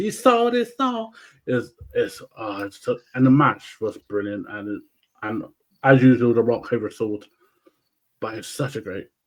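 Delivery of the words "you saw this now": very high-pitched voice. Recalling a wrestling match, the speaker quotes Paul Heyman in a high-pitched voice. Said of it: "Paul Heyman high high voice goes".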